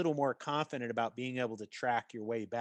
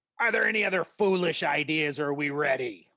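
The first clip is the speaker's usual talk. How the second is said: loud in-character yell; 3 semitones higher, 7 dB louder than usual. Voicing a gruff leader yelling at the group: yelling in character. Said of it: "he yells out".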